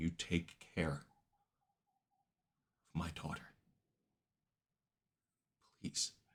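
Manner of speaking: choked-up voice, catching with emotion. Voicing a character handing over a blade, getting choked up. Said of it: "You see she's getting choked up".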